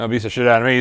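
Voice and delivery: ordinary talk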